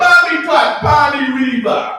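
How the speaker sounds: very high, loud, shrill put-on drunk Jamaican accent. Retelling a woman whose accent changed after five shots, imitating a jamaican accent. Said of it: "she had a whole new Jamaican accent".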